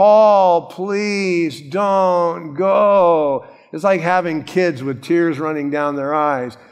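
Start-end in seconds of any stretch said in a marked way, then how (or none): 0.0-3.5 play-acted, very slow, drawn-out whining plea. Retelling believers begging paul not to go, mock pleading, whining. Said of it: "they're crying, and they're pleading, and they're whining, and they're begging".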